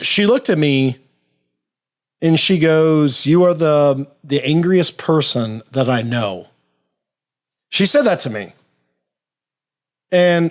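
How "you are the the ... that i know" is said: plain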